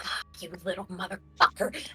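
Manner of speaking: airy, breathy voice. Narrating a game scene, speaker voices the being the players hear again: breathy voice. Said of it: "you hear the breathy voice again".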